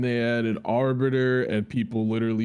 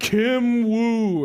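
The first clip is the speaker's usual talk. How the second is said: mock, very high, hyped, shrill announcer-style excited shriek; 10 semitones higher, 5 dB louder than usual. Recalling the Killer Instinct announcer calling a character: imitating an excited announcer scream. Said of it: "he screamed it like he was very excited".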